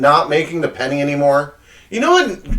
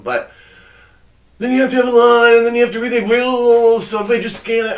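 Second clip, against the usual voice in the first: mocking put-on voice, pitched higher; 7 semitones higher than usual. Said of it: "I don't know why I'm making his voice like that".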